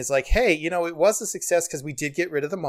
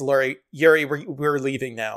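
abrupt switch to grave, very serious earnestness; 2 semitones lower than usual. Retelling the character leaving: imitating Kay's very serious tone. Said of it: "to very serious".

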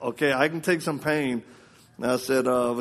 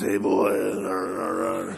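rough, creaky, broken-down voice, drawn out; 5 semitones lower than usual. Imitating dad, whose broken nose stayed broken: imitating dad's rough voice. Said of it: "God saved him, but not his voice".

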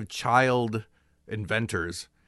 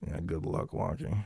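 mock muttering under breath, quieter; 4 semitones lower, 6 dB quieter than usual. Retelling what a man said under his breath as the speaker walked by, retelling a mutter under his breath. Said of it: "just under his breath says".

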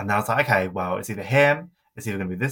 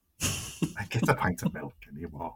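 put-on Scouse accent, said quieter; 2 semitones lower, 7 dB quieter than usual. Trying to imitate Cheryl about going to Tesco: Cheryl impression in Scouse accent. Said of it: "that accent came out when I'm trying to be Cheryl".

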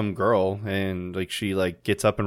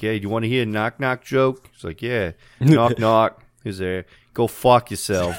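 put-on accent, possibly Brooklyn; 2 semitones higher, 4 dB louder than usual. Retelling how the actor told a knock-knock joke, in a Tom Hanks accent, more of a Brooklyn. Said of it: "more of like a Brooklyn".

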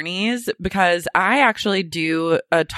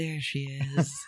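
very soft, low muttering under the breath; 5 semitones lower, 12 dB quieter than usual. Telling others what someone said in a taxi crossing the bridge, retelling a mutter under breath. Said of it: "Ryan goes under his breath".

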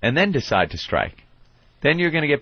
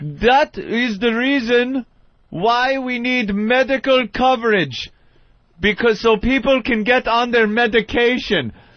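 put-on Caribbean accent, pitched very high; 10 semitones higher, 3 dB louder than usual. Retelling what a man from some island said, in a West Indian accent. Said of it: "It's like West Indian".

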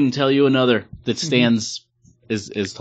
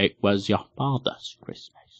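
hushed, soft, swooping British film-star voice; 2 semitones lower, 6 dB quieter than usual. Trying the line once more for the others: Michael Caine impression. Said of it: "To do my Michael Caine".

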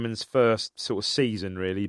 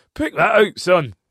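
very high, loud put-on Scottish accent; 10 semitones higher, 10 dB louder than usual. Imitating a TV commentator's goal call: Andy Gray Scottish accent. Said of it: "That's how he speaks".

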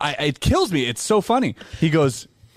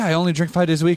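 normal talking voice

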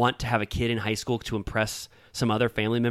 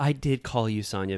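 put-on patronizing, condescending tone. Retelling how one woman answered another about a missed call, mock-patronizing tone. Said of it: "very patronizingly".

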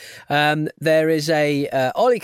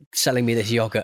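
ordinary talk, nothing marked

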